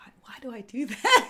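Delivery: unvoiced whisper, as if to oneself.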